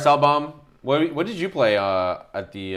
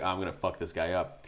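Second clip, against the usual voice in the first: mock hushed, very quiet, self-satisfied gloating murmur; 5 semitones lower, 13 dB quieter than usual. Retelling what a smug opponent thought during a game: imitating smug gloating. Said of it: "he was pretty smug".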